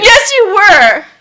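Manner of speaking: sobbing through the words, high and tearful. Answering an apology during an argument, crying. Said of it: "I want you to stop crying".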